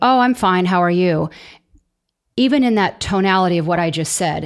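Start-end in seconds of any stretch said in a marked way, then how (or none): 0.0-1.3 offhand, insincere, dismissive, unmeant pleasantry tone. Acting out someone's reply to how are you, imitating an insincere reply. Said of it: "I don't think it sounded very sincere that I'm fine".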